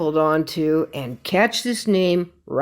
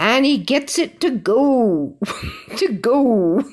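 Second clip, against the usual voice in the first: put-on very slow, high, slight Canadian accent; 6 semitones higher than usual. Quoting what a Raptors fan always says, which cracks you up, in a slight Canadian accent. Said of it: "just this little bit of a Canadian accent".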